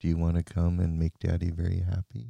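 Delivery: put-on low, sensual, hypnotic voice. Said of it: "me talking to you like this".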